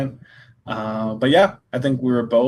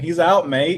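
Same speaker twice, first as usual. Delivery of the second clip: put-on pitched-up Irish accent; 5 semitones higher, 3 dB louder than usual. Recounting the fight, the speaker quotes Paddy Pimblett to the ref in an Irish accent. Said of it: "his Irish accent".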